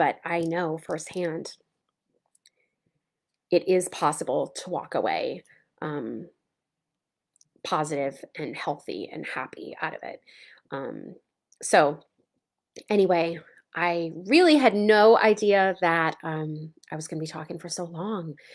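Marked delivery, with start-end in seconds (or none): 0.0-10.2 choked-up, emotional, breaking mid-sentence. A speaker sharing a personal story, getting choked up. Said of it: "I'm getting choked up".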